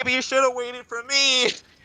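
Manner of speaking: very high, carrying shout. In a role-play scene, a character calls to someone who didn't wait, shouting from the back. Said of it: "I shout from the back".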